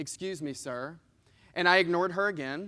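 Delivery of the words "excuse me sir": low, soft, mock gentle, sweet tone. Retelling how a lady called to them a second time, imitating her sweet tone. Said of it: "in the same sweet tone".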